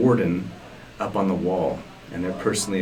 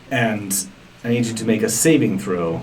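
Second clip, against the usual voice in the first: ordinary talk, nothing marked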